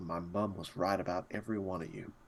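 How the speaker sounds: very quiet, low grumble under the breath. Voicing a character complaining about the group: muttering under his breath. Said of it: "Mutters under his breath".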